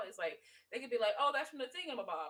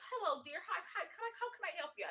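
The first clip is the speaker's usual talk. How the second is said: gracious, helpful, pitched-up polite lady voice; 7 semitones higher than usual. Retelling a Big Mouth scene where a boy goes to a lady; imitating a polite lady. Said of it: "she sounds exactly like that woman".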